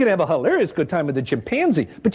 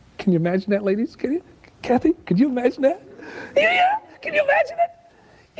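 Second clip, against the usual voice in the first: high falsetto voice, pitched higher; 9 semitones higher than usual. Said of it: "That's a really falsetto-y voice".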